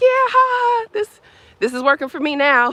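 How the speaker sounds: laughing it off, very high pitch. Retelling own reply to a teasing neighbor: retelling own laughing reply. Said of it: "And I just laughed".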